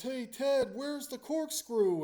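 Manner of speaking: loud, high-pitched yelling. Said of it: "he just yells".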